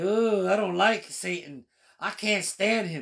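put-on contemptuous sneer, slow and drawn out. Retelling his own reaction to satan in the story: imitating a sneer. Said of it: "I'm sneering at him like".

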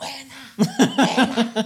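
play-acted, shrill, very high drunken yell. Telling a story about greeting someone while drunk, imitating a drunken shout. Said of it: "empieza a gritar".

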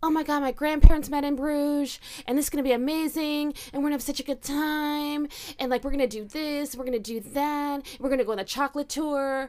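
mock-gushing, effusive, waxing on at length. Speaker retells what a woman told the man across the table: mock-gushing, waxing on. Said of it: "She's like waxing on about like".

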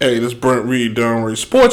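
low, hushed, announcer-style half-whisper. Retelling recording his sports show in her old apartment, retelling his half-whisper. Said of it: "why are you whispering?".

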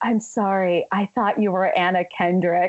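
spoken very quietly. Retelling how a man leaned down to speak to them, speaker quotes him very quietly. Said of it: "he leans down and he says very quietly".

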